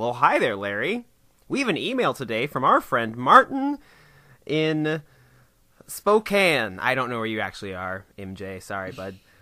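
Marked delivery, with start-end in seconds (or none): 0.0-6.8 big, bouncing, swinging cartoon-style delivery. Show host introduces a listener email, in a Bob the Tomato voice. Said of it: "read it like Bob the Tomato".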